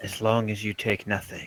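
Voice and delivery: hushed, spectral, ghostly half-whisper. Voicing a thing in the game that half-whispers back to the players, entity half-whispering back. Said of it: "it whispers back to you".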